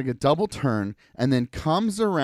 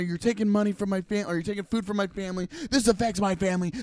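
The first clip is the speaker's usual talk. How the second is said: high, rushed, put-on screaming with words tumbling out; 6 semitones higher than usual. Retelling how a man screamed at the speaker's wife in a parking lot, retelling a scream. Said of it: "He screams at her".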